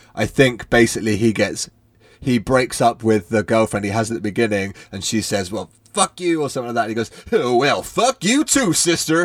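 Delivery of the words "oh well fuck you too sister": put-on southern accent, high, slow and drawn out. Retelling a character's comeback after his ex-girlfriend curses him, southern voice. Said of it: "in a southern voice".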